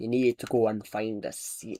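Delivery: put-on speaking in a Scottish accent. Retelling a bus driver's words after a request: scottish accent. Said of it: "Scottish accent, please".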